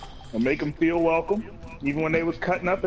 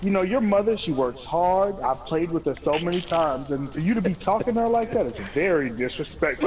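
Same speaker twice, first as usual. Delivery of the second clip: plain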